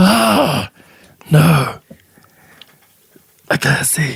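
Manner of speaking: high, put-on zombie voice, played for laughs. Acting out a zombie's reaction while chatting with friends, zombie voice. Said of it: "that's [name]'s zombie voice".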